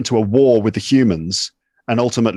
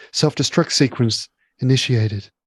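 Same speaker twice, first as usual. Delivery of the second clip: mock dispassionate sci-fi computer announcer voice. Imitating the voice that announces a spaceship self-destruct: imitating a dispassionate sci-fi computer voice. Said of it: "this dispassionate voice".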